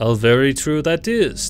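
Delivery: jeering, mocking, slow and drawn out. The fat man answers Sasha's whispered words, jeering. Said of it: "the fat man jeered".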